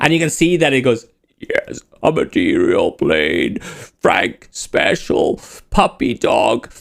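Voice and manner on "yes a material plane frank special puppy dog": very slow, creaky speech while inhaling. Voicing a bar server answering a drink order: talking on the in-breath. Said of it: "on the in breath".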